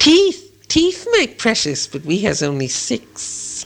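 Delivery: high, hissing creature voice, pitch swinging wildly. Narrator reads Gollum answering a riddle, hissing Gollum voice. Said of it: "he hissed".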